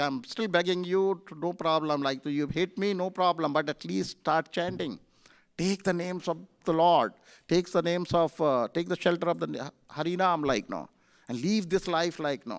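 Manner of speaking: normal talking voice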